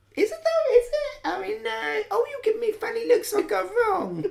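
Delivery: put-on unsure, very high voice with slight Essex accent. Mocking the other speaker's doubting way of talking: imitating Michelle's slightly Essex voice. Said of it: "It's exactly how you speak".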